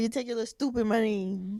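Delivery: put-on sassy, snippy, dismissive attitude. Retelling how a borrower pays money back: imitating someone with an attitude. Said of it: "they pay you back with an attitude".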